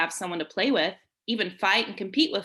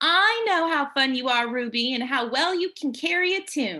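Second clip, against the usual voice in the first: sweet-as-a-peach, pitched-up voice; 6 semitones higher than usual. Reading Teresa's reply to a pouting Ruby, in Teresa's sweet voice. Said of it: "Teresa said in her sweet peach voice".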